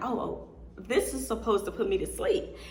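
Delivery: ordinary delivery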